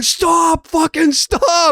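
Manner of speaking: mock shrill scream, pitched very high. Retelling how the shop owner screamed at the people at the front door: retelling a scream. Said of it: "he's like screaming at the front door".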